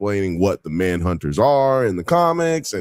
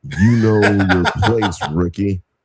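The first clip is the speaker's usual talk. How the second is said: play-acted superior, condescending, talking-down tone; 3 dB louder than usual. Describing a coworker's tone: imitating a condescending tone. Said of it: "His tone is also that".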